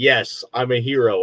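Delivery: ordinary delivery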